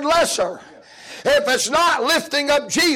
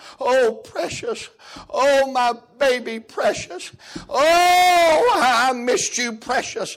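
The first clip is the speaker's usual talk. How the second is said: weepy, slow, sobbing, with drawn-out "oh". Retelling a woman at the airport greeting her dog: imitating a crying woman. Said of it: "And she was crying".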